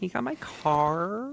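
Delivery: put-on very high Valley Girl accent, "car" stretched out. Demonstrating the word car in a Valley Girl accent. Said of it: "We're gonna get Valley Girl with it".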